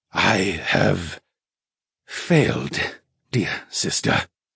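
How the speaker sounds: slow muttering with drawn-out words. A spirit, head against the bars, speaks to his sister: muttered. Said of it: "Mallow muttered".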